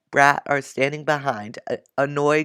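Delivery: ordinary delivery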